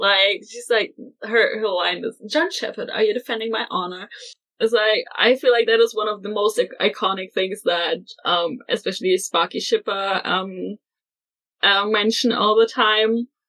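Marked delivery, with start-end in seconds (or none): 2.3-4.1 smug, pleased-with-herself taunting tone. Quoting a character's line from the episode: imitating a smug line. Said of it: "she is so smug about it".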